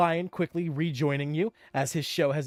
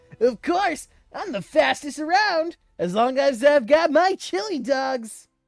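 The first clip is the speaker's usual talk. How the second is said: high, loud, knockoff cartoon-hero voice, belted out; 9 semitones higher, 6 dB louder than usual. Voicing a fast snail thanking a player for a chili dog: knockoff Sonic voice. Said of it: "my knockoff Sonic impression".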